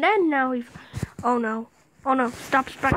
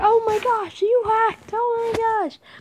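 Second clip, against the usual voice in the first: play-acted, very high-pitched freaked-out panicking voice; 9 semitones higher, 4 dB louder than usual. Streamer narrates a player who can't reach them, imitating someone freaking out. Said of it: "He's kind of freaking out".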